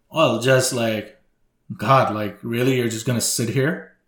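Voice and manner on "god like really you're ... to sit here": ordinary talk, nothing marked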